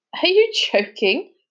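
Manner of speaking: high, derisive scoff of disbelief. Hearing the plea to save the dolphins, a friend answers, scoffing. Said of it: "scoffed Sam".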